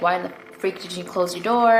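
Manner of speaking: normal talking voice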